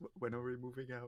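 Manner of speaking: hushed, hesitant, quiet, stumbling voice. Retelling how a character pulls someone aside to ask: imitating a quiet question. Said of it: "quietly says".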